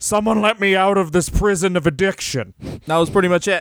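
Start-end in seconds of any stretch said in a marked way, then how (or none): 0.0-2.5 child's put-on grown-up voice. Imitating a wrestler's affected voice, like a kid doing an impression of an adult. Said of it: "like a kid doing an impression of an adult".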